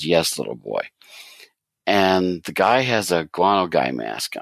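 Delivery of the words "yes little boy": put-on snooty, disdainful, dismissive tone. Retelling a comic scene, reporter answers a boy: imitating obvious disdain. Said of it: "with obvious disdain".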